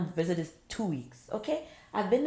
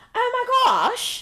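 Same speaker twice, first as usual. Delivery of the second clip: very high, American-sounding put-on British accent; 5 dB louder than usual. Acting out how new people try to imitate her accent, americans imitating her accent. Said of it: "they try imitate it, but in their American way".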